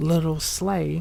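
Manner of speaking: plain reading voice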